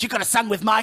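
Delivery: put-on gremlin-like voice with Yiddish-inflected accent.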